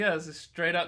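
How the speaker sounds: ordinary talk, nothing marked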